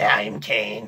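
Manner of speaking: low, electrolarynx talking-box voice. Recalling a masked figure who never talked until then, Kane's voice-box voice. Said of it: "Sorry to anyone who's a smoker and actually has to talk like this".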